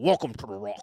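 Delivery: low, gravelly delivery chewing every word. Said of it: "sounds like he's chewing on rocks".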